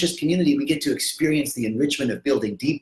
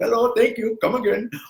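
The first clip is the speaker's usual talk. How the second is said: done badly, with pitch raised; 9 semitones higher than usual. Continuing the joke: bad Apu impersonation. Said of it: "a really bad Apu impersonation".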